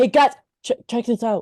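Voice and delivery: loud hollering yell. Acting a scene, calling the others over to look: yelling. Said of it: "why is he yelling?".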